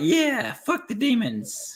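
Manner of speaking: very high, slow, put-on prepubescent kid voice. Retelling their own reaction back then to a book burning, in a prepubescent voice. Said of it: "prepubescent voice came out there".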